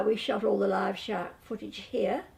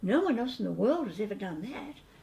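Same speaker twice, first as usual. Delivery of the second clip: sugary, sarcastic tone. Retelling own past reply to people who lie: retelling own sweet sarcasm. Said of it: "I was very sweet and extremely sarcastic".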